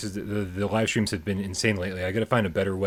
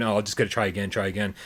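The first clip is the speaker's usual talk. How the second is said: plain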